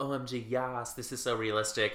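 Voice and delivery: ordinary talk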